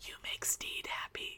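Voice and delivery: very quiet, hushed whisper under the breath. Quoting steed after the kiss: imitating a quiet whisper. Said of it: "just whispers quietly".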